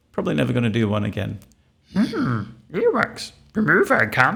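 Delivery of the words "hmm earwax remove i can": very high, slow, swooping voice. During an earwax appointment, trying a first-ever Yoda impression. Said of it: "I've never done a Yoda impression before".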